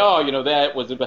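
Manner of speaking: ordinary delivery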